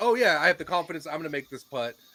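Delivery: ordinary talk, nothing marked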